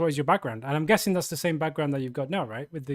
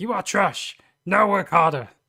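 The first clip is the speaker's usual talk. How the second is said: loud, harsh, cruel, berating kung fu movie master voice; 3 semitones higher, 7 dB louder than usual. Imitating a harsh coach as a kung fu master: imitating Morgan as a harsh kung fu master. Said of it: "my impression of you as a kung fu master".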